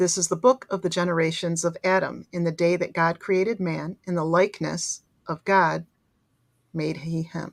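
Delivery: ordinary delivery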